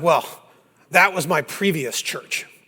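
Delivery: acted, dead-serious, straight-faced delivery. Telling a joke, giving the rescued man's punchline: imitating a serious tone. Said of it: "the guy gets all serious".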